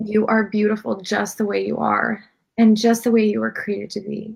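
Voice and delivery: choked-up voice. Answering a listener, Navina, hurt by comments on her looks: choked up. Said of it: "I'm getting emotional".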